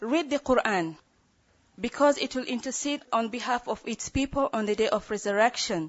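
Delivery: ordinary delivery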